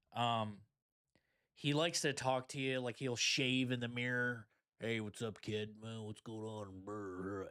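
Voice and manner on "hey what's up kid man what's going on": cowboy-style drawl with on drawn out long. Imitating a TikTok creator talking while shaving in the mirror: imitating him talking like a cowboy. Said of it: "he's just talking like the cowboy".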